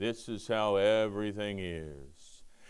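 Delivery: very low, gloomy drawl, "is" dropped low and dragged out. A speaker describes how Eeyore always talks, in an Eeyore voice. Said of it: "he always talks like this".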